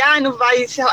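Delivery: ordinary talk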